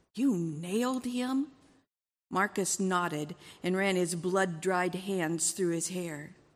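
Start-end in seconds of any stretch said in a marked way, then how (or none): 0.1-1.4 gasped with a caught breath. A wife answers her husband's account, gasping. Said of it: "His wife gasped".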